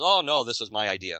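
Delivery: ordinary talk, nothing marked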